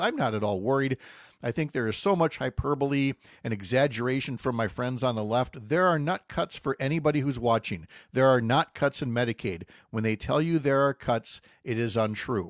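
ordinary delivery

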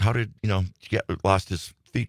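ordinary talk, nothing marked

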